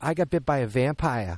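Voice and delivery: put-on broad, thick Boston accent, laid on. On a podcast, recalling how the kid in a film talks: Boston accent, kid from Jaws. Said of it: "that's the accent where the kid goes".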